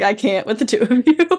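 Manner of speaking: normal talking voice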